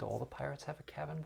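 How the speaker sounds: very soft, quiet mumble under the breath. Voicing a shocked character who mutters to himself: muttering under his breath. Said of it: "kind of mutters under his breath".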